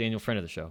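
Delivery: rapid-fire, words run together. Podcast host naming listener Daniel, friend of the show, said really fast. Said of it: "You gotta say it really fast".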